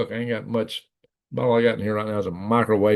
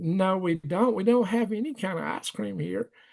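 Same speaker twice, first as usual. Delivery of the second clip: acted, sugary, very sweet-sounding voice; 10 semitones higher, 4 dB quieter than usual. Retelling what the woman taking their order said: imitating a real sweet voice. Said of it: "real sweet sounding voice".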